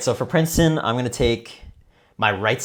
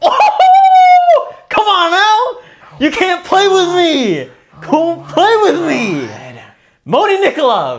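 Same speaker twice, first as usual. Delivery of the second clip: very loud, very high, swooping screech; 9 dB louder than usual. Reacting to a draft pick on a podcast, screaming. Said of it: "I was probably screaming that".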